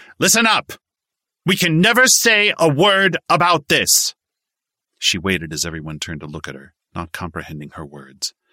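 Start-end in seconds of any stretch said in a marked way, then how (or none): 0.2-4.1 very high, loud, shrill raised voice. A short woman on a poker table addresses everyone; raised voice. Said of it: "raised her voice".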